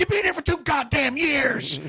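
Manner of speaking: high mock screaming holler.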